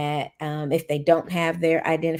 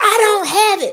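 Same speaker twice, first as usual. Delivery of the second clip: very shrill, very loud, high-pitched screaming; 10 dB louder than usual. Speaker retells a student asked for a temporary ID: imitating a student screaming. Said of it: "so the student scream".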